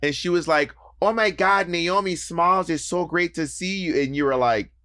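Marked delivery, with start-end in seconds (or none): 1.0-4.0 put-on thick North Dakota accent, pitched higher. Retelling what a friend said on meeting: thick North Dakota accent imitating Carly. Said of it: "a super thick North Dakota accent".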